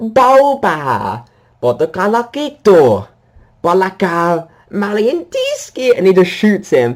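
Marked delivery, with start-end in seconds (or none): 0.0-6.0 high-pitched, very slow speech with every syllable stretched. Retelling a scene where the character greets Boba: Bib Fortuna voice. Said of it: "he's like".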